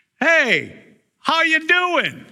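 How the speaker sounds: very high, very slow, drawn-out shout. Retelling the story, calling out to the boat from shore: retelling a yell from shore. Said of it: "on the shore yells out and says".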